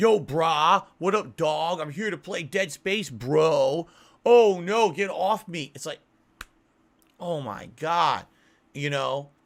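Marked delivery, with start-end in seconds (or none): 0.0-5.7 loud, slow dumb bro voice, "bro" stretched. Mocking a YouTuber's Dead Space commentary: stupid bro commentary voice. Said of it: "they're using this stupid".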